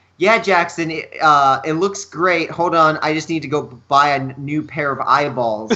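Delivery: ordinary delivery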